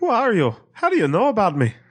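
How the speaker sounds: Irish brogue. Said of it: "You gotta sound like Commissioner Gordon".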